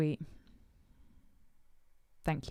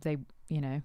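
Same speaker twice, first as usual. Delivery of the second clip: normal talking voice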